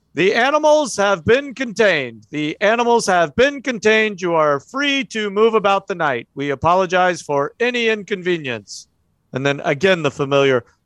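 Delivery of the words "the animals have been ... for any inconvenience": announcer voice sounding through a loudspeaker. Voicing street announcers calling out through megaphones: megaphone announcement voice. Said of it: "voices kind of going up and down the street through megaphones".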